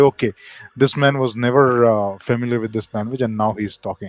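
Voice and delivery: ordinary delivery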